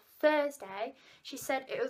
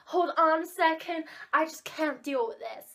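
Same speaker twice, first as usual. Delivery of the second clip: slow, drawn-out, put-on American accent; 4 semitones higher, 4 dB louder than usual. Retelling what the American teacher said during the mock exam: imitating an American teacher. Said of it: "She's American".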